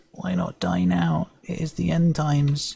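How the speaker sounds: feeble, weak, high, rising voice. Narrating a dying sprite that looks up and speaks just before it expires, weak, high-pitched voice. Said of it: "in a weak, high-pitched voice".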